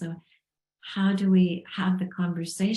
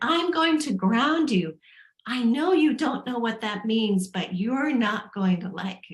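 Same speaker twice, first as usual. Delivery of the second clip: acted, mild, half-shouted yelling; 4 semitones higher than usual. A parent retells threatening their child with grounding, retelling a scream. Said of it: "So I'm screaming".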